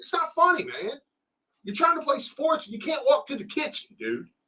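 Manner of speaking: mock shrill, very high scolding yell. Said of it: "I'm just screaming at my son".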